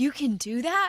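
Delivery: stunned, shocked, disbelieving tone. Retelling a fellow traveler's reaction on a plane, mock shocked disbelief. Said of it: "he was shocked that this was a new invention".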